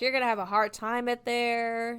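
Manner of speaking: put-on mean voice. Retelling a character's warning to the girl: mock-mean Miss Van Hopper. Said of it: "being super mean about it".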